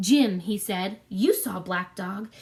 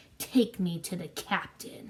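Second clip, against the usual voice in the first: through clenched teeth, lower, quieter, slower; 3 semitones lower, 6 dB quieter than usual. Reading a story, voicing the blind man gripping the boy's hand, through gritted teeth. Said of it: "the blind man said through gritted teeth".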